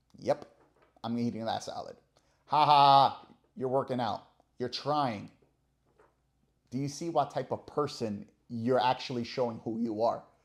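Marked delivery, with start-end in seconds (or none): 2.5-5.3 loud, mock sneering, mocking jeer. Imitating someone who mocks a person at the gym: imitating someone mocking. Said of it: "seeing the person going to the gym and going".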